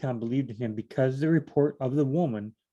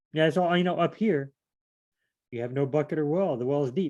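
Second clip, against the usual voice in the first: usual speaking voice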